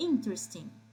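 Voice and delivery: first syllable "in" of "interesting" stressed. Teaching English pronunciation in Portuguese, stress on first syllable 'in'. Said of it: "a gente tem que colocar a parte mais forte no in".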